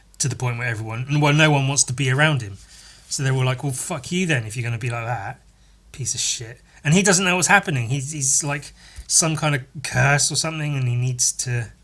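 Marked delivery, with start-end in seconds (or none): none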